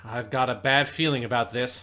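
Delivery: ordinary talk, nothing marked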